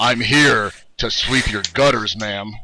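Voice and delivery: put-on cocky, confident, seductive come-on voice. Joking that he can't act in porn, putting on a confident voice. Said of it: "that confident voice".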